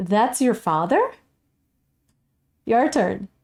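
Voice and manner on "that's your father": level tune jumping sharply up on "father". Modeling a question statement for students to mimic, level, then sudden rise on father. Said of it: "see if you can mimic my intonation".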